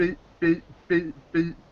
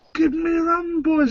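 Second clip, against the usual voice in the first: put-on so-so Scottish accent, pitched higher; 11 semitones higher, 4 dB louder than usual. Retelling a scene from Muppet Treasure Island, Billy Connolly Scottish accent impression. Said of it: "my Scottish ac- accent impression's not that great".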